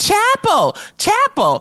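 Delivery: mock very high, shrill, swooping yell. Retelling how a woman yelled out during a conversation, retelling a yell for attention. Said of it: "She starts yelling".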